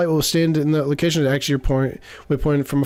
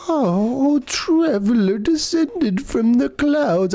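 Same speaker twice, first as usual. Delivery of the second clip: put-on, slow, high elderly woman voice; 8 semitones higher than usual. Reading a game character's greeting aloud, doing an old lady voice. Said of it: "do an old lady voice".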